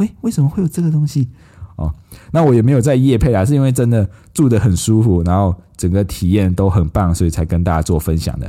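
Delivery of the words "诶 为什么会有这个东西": put-on quiet thief-like voice, higher pitched. Retelling a companion's reaction to decorations in the room: imitating 佩珍's quiet thief-like voice. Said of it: "像小偷那种声音".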